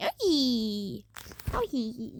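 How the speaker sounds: low, swooping, drawn-out creature cries. Describing a scene, voicing the Yoshi inside crying out, Yoshi impression. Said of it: "I don't have a really good Yoshi impression".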